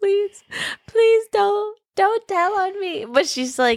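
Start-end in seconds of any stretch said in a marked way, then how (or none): 0.0-3.0 mock tearful crying, much higher-pitched. Retelling a story, the speaker quotes a terrified girl, imitating someone crying and pleading. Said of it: "she's crying and she's just like".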